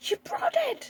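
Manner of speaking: overjoyed, delighted cry, very high. Retelling what the mother said when the woman came in, imitating her sounding really happy. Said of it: "Really happy".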